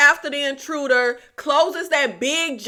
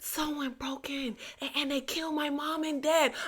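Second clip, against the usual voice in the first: barely audible, very hushed half-whisper; 15 dB quieter than usual. Acting out a 911 caller reporting a break-in: imitating a half-whispering 911 caller. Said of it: "they'll be whispering".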